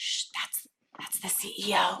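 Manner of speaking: slow, breathy, hushed, secretive whisper. Retelling what someone in an elevator said to a colleague: imitating someone whispering. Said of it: "whispered to their colleague".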